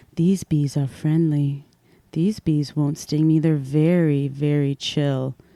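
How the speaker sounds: soft-spoken, mild, low voice. Describing a bee lady on TikTok, imitating a woman's soft voice. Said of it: "she's got this like soft voice".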